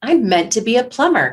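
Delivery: happy, glad, cheerful, upbeat tone. Asked to say the sentence out loud in an exercise, sounding happy. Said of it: "You sound happy".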